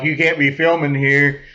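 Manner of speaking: ordinary talk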